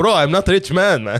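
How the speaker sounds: put-on slight, lightly done Caribbean accent. Retelling what a dealer's friend said on a bench: slight caribbean accent. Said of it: "I'm doing a little bit of a Caribbean accent".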